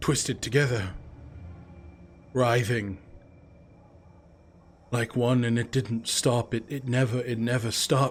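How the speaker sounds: shaking, trembling, quavering voice. Torek recounts what he saw in his village last night: shaking voice. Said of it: "What you see right now is a grizzled human man, hollowed eyes. He sort of sits upright, his voice shaking as he begins to recount the horrors. / What you see right now is a grizzled human man, hollowe".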